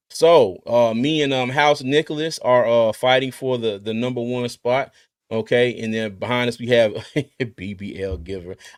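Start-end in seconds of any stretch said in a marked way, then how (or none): 7.5-8.5 slow speech, words broken up by laughter. Reading out fantasy football team names, laughing while talking. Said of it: "I can't say that name without laughing".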